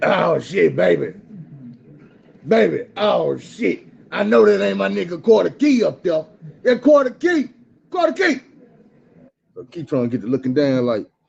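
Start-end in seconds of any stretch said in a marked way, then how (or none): 0.0-8.4 high, slow, rough, drawn-out drawling call. Retelling a prison visitation, imitating Big Mike's voice.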